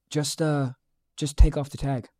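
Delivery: mock-calm, at ease. Retelling what a woman said during a loud argument, imitating her calm voice. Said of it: "she just goes in like this most calm voice".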